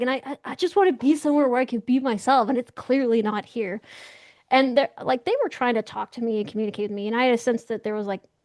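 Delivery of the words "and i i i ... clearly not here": play-acted weary, plaintive, complaining lament. Retelling answering aliens why leave Earth: imitating own complaining. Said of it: "I was complaining to them".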